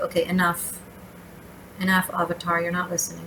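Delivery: ordinary delivery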